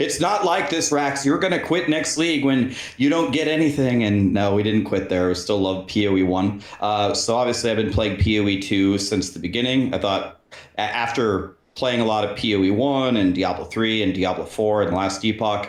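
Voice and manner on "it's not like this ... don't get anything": put-on, high-pitched screaming. Retelling what everybody told them as a new player: imitating people screaming. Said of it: "everybody was screaming".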